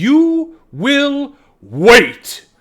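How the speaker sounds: very high, very loud, enraged, furious yell. Narrator voicing a woman ordering a gnome to wait, shouting. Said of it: "And she shouts".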